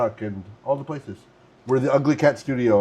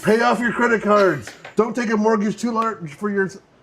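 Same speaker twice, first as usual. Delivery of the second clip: pitched far up, loud shouted hollering; 9 semitones higher, 4 dB louder than usual. Retelling a man shouting financial advice at a station: imitating a shout. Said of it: "a guy shouting".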